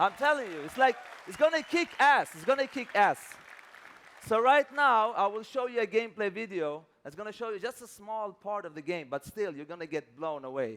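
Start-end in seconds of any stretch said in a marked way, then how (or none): 0.0-3.2 hyped, excited, higher and louder. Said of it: "I'm so pumped up".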